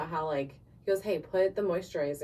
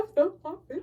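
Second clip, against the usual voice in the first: put-on crying voice, much higher; 11 semitones higher, 5 dB louder than usual. Showing how she sounds when really upset, the speaker is imitating herself crying. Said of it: "I like your impression of you crying".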